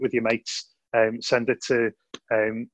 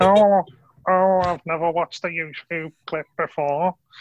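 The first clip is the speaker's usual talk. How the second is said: put-on high, elderly grandmother voice; 6 semitones higher, 4 dB louder than usual. On a podcast, after teasing a co-host, the speaker does an impression of a nan. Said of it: "now I've done an impression of everybody's nan".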